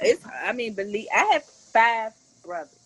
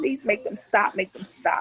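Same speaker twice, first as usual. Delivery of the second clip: put-on crying, sobbing, tearful pleading voice. Retelling still getting phone calls while filing paperwork in the commissioner's office: retelling a crying plea. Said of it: "I'm crying like".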